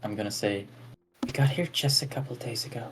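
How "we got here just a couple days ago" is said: hushed, barely audible whisper. Matching another character's whisper in a role-play scene, whispering. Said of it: "I'm also whispering".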